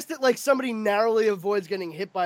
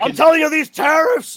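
very loud, high-pitched ranting; 7 semitones higher, 9 dB louder than usual. Doing an impression for the others: Alex Jones impression. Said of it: "great Alex Jones impression".

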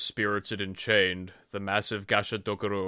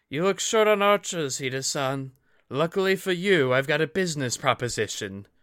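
husky voice, raised in volume and pitched up; 7 semitones higher, 5 dB louder than usual. Narrator reads a ronin archer addressing Hida-san, husky ronin woman's voice. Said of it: "He tossed his gaze to a rough-looking woman. Leaning on a strung bow, scars crisscrossing her cheeks, she bore no sword, no sign of family or clan, Just some Ronin, / He tossed his gaze to a rough-loo".

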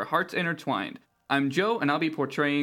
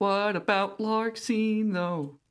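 eerie ghostly voice, much higher; 6 semitones higher than usual. Player retelling a game scene, speaking as a ghost in a ghostly voice. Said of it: "you hear my ghostly voice saying".

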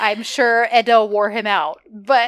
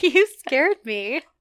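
put-on slow, giggly, bashful girl's voice. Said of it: "giggly bashful she is".

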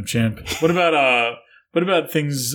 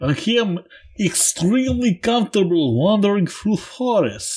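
put-on Russian accent; 7 semitones higher than usual. Trying out different accents, in a Russian accent. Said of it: "this is Russian?".

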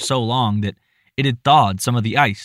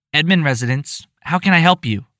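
put-on young, squeaky, high, overly polite voice; 5 semitones higher than usual. A child answering a phone call to the Edmund residence, squeaky young voice, overly polite. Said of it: "a squeaky, young voice answered, almost overly politely".

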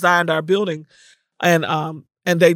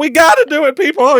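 put-on crying, very high-pitched and loud; 10 semitones higher, 7 dB louder than usual. Speaker reenacts pleading with her staff at a meeting: retelling her tearful plea. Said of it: "And I'm crying".

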